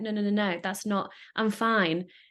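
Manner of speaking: ordinary talk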